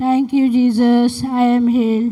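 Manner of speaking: very loud, full-voiced delivery. Repeating a prayer line after being told to say it: loudly.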